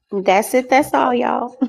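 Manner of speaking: light Texas twang creeping in. Wrapping up a point, with a Texas twang coming out. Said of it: "my little Texas twang came out right there".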